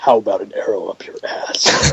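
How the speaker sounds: breathy whisper with no inflection at all. Mocking a game character's repeated lines: monotone Arrow voice. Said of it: "his Arrow voice didn't work".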